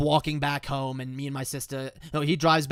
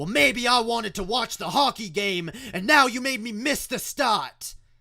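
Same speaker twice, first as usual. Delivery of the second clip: mock sharp, angry, snapping tone, pitched up; 7 semitones higher than usual. Retelling the father's reply in the car: imitating the father snapping back. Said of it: "he snaps back".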